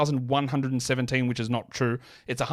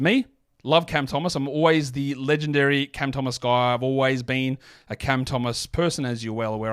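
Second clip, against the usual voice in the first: normal talking voice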